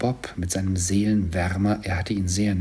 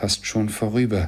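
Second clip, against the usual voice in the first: ordinary delivery, nothing marked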